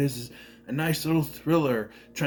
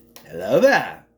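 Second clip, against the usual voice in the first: raised, declaimed delivery; 5 semitones lower, 7 dB louder than usual. Greeting to open a movie review: Obi-Wan Kenobi voice. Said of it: "there's a reason why I said it like that".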